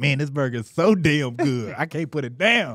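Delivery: slow, gushing, raving reviewer-style delivery. Joking that another speaker sounds like a food review: imitating a gushing food reviewer. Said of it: "That sounded like the reviews where you be like".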